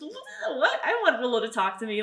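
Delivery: high-pitched squeal mixed with laughter.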